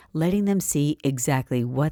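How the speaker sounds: ordinary delivery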